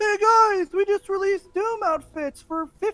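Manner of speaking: very high, loud, mock announcer voice.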